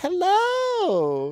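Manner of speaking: very high sing-song put-on voice, "hello" drawn out. Showing that they can't talk high-pitched, high-pitched voice. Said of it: "I can't really do the high pitched other than this".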